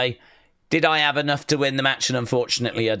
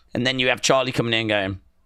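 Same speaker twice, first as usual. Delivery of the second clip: ordinary delivery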